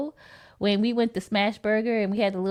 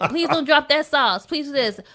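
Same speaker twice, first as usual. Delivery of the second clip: put-on yelling, higher and louder; 4 semitones higher, 4 dB louder than usual. Retelling passing out food to the kids in the car: imitating own yelling. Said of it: "I'm yelling like".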